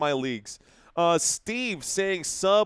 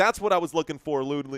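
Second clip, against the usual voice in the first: normal talking voice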